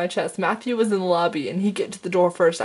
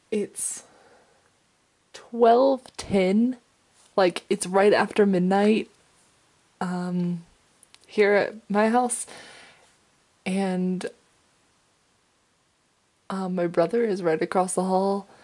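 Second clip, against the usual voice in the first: quiet, low, hushed voice. Recording after midnight with a brother across the hall, speaking quietly. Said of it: "I'm trying to be a little quiet".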